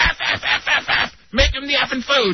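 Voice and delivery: mock screaming. Retelling how your girlfriend ran over in the restaurant, imitating her screaming. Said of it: "Just like screaming".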